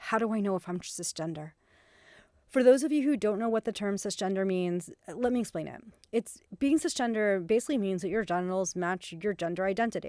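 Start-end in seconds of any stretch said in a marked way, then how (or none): 0.0-1.5 put-on very concerned, worried voice. Retelling a young man's private question, imitating a very concerned voice. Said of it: "in a very concerned voice".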